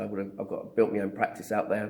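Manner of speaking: ordinary talk, nothing marked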